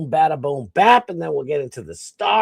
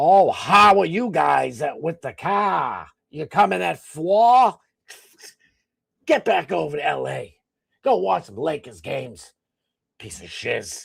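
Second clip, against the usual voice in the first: bad fake Boston accent, car drawn out. Mocking movie Boston accents: Jack Nicholson's fake Boston accent. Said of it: "the worst one ever is Jack Nicholson".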